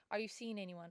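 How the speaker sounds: ordinary delivery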